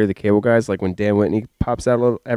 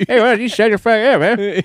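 very high, friendly, happy-sounding yell; 10 semitones higher than usual. Act out a man who is still happy when he's mad, imitating someone yelling while smiling. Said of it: "How are you smiling while you're yelling?".

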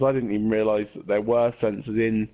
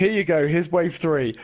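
higher-pitched, teasing mock game voice. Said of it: "And then it's just like".

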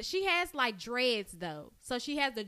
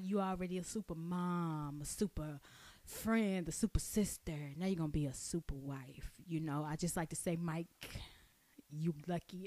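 put-on sexy voice, lower and quieter; 7 semitones lower, 7 dB quieter than usual. Acting out a voice message someone sent, imitating a sexy voice. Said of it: "why you have to send it in a sexy voice".

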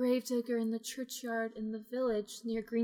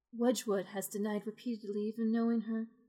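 ordinary talk, nothing marked

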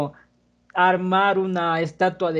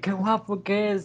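mock gushing, called-out shout like a crowd; 2 semitones higher, 4 dB quieter than usual. Retelling what people shouted at the king of spain: imitating people shouting. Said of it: "Y gritándole".

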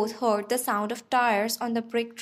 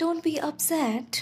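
imploring, pleading voice, pitched up; 5 semitones higher than usual. A narrator reads him at the first-person speaker's side, pleading. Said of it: "he pleaded".

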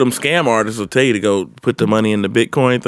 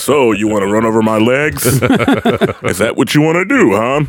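deep, intimidating commercial announcer voice. Suggesting how to confront a shopper: Arby's meat guy voice. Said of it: "did the Arby's meat guy".

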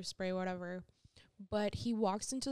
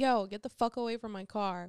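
acted-out, reenacted shouting; 5 dB louder than usual. Retelling how they yelled at a man looking into their car at night: retelling their own yell. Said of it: "And I'm like yelling from inside the store".

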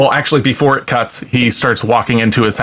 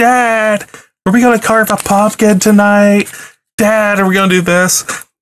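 put-on very high, shouted, hollering little kid voice; 10 semitones higher than usual. Retelling a scene where a son yells out the window: imitating a kid yelling. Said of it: "His son is upstairs yelling out the window".

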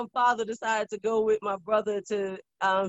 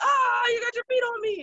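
put-on alarmed freak-out, pitched very high; 7 semitones higher, 8 dB quieter than usual. Recalling how dad reacted to feet, imitating dad's mock freak-out. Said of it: "he always acted like he was freaked out".

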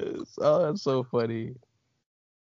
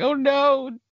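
shrill, loud panicky cry. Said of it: "Sydney's like".

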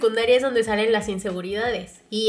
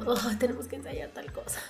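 mock reluctant, unenthusiastic tone, quieter; 9 dB quieter than usual. Retelling her own reaction to rehearsing: imitating own unenthusiastic self. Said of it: "no era algo que me emocionara".

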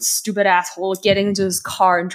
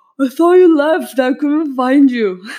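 put-on sloppy, loud, raised, slurring drunk voice; 7 semitones higher, 7 dB louder than usual. Retelling what Kurt replied after falling off his stool, imitating Kurt's drunken slur. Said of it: "while he's slurring these words".

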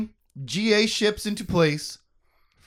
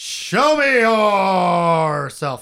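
stern, raised dad voice, yourself drawn out; 6 dB louder than usual. Narrator voices a character's angry command to the thing laughing at him, in a dad voice. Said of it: "He puts his dad voice on and says".

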